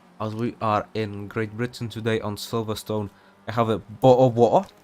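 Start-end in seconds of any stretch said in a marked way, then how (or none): 3.5-4.6 loud mock British accent. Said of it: "my best imitation of a British person".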